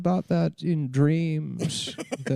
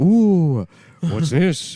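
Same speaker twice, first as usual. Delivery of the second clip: louder, weird put-on Jamaican-style voice; 8 dB louder than usual. Imagining a comedian voicing a goofy movie creature: Robin Williams as Jar Jar Binks. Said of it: "I was imagining Robin Williams being like".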